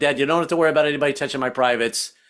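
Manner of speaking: usual speaking voice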